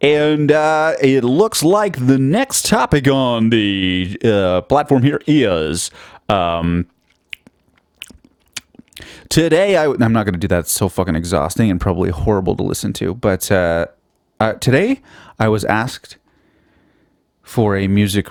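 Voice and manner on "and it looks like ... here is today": put-on radio announcer voice, slow and drawn out. Podcast host switches voices to introduce the next topic, announcer voice. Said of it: "I'll do the rest of this wonderful podcast in announcer voice".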